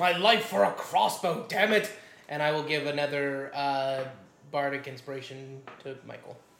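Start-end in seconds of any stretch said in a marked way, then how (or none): 0.0-1.9 loud, shouted, pleading yell. Playing a character in a game, crying out for a crossbow: in-character yell. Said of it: "I guess I will yell".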